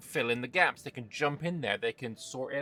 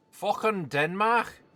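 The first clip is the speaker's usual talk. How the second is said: Liverpool accent, raised in pitch; 8 semitones higher, 4 dB louder than usual. A player picking whom to ban next blurts a name in a liverpool accent. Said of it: "That was my Liverpool accent".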